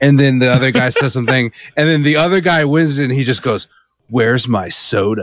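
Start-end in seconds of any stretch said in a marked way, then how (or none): 4.1-5.2 announced like a game show host. Describing a fighting game outro, the speaker voices the winner in a Halo announcer voice. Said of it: "You just sounded like when we've been making fun of the Halo announcer".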